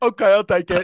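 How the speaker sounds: loud deaf-style speech, woman's voice. Retelling what a woman in an alley said: imitating a deaf woman's speech. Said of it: "Like that".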